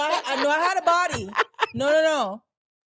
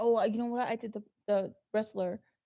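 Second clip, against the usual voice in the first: usual speaking voice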